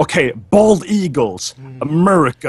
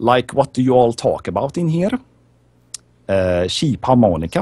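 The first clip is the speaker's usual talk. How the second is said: English spoken with a Swedish accent; 3 semitones lower than usual. Asked to do it, the speaker answers in a Swedish accent. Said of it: "Swedish accent".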